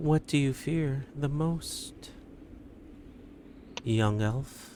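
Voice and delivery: hushed, quiet, soft high whisper. A mysterious voice questions the young elf: soft quiet whisper. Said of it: "A soft, quiet voice whispers".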